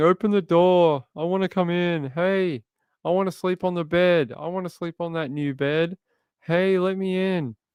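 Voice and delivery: put-on, high, yowling cat voice. Retelling how the cat yowls outside the closed door: voicing the cat yowling. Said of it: "he sits outside and yowls all night long, saying".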